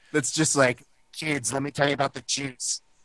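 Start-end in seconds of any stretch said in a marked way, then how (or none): 1.2-2.8 put-on retro seventies producer-style voice. Joking about someone's manner, mimicking an old seventies producer voice. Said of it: "Sound like an old seventies prof-, like, producer".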